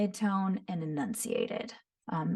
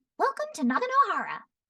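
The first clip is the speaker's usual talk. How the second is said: bright, musical, giggly, bouncy sing-song voice, very high; 12 semitones higher than usual. Showing how a character speaks: high-pitched giggly Yoimiya voice. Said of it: "very high-pitched".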